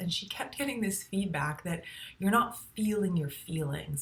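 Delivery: ordinary talk, nothing marked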